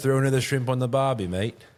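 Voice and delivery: put-on Australian accent. Joking with another speaker about an accent, slipping into a put-on Australian Outback accent. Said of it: "I thought it was more of that Outback".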